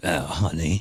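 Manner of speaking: smoky voice of a heavy chain smoker. Mocking a woman who sounds like a heavy smoker: imitating a smoker's voice. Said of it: "sound like she smokes a couple of, uh, couple of cartons a day".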